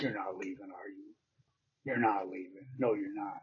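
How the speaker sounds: mock tough, badgering, hard, insistent delivery. Retelling how he blocked the way out: imitating someone acting tough. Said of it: "he was kinda being a hard ass".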